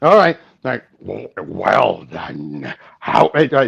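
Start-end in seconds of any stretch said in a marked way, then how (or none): 1.0-3.3 put-on "boy" dropped low in pitch and stretched out. Speaker showing off a character voice while others wait, Gorilla Grodd voice. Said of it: "show off my Grodd voice".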